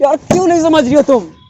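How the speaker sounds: shouting. Arguing with a woman who may leave him, shouting. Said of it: "क्यों चिल्ला रहे हो?".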